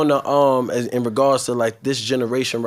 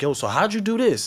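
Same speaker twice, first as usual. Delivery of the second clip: put-on excited voice, higher in pitch; 8 semitones higher than usual. Retelling a phone conversation, imitating the caller's excited voice. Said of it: "the excitement in the voice".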